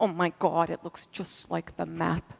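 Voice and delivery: put-on, strong, heavy Massachusetts accent. Quoting a fellow astronaut looking down on your first flight together, imitating a big Massachusetts accent. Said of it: "He has a big Massachusetts accent".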